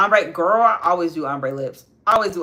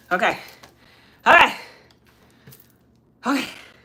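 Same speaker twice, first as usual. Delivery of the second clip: winded, breathless, pitched-up panting, catching breath; 5 semitones higher than usual. Back after running upstairs, talking to viewers while out of breath. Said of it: "Let me get my breath".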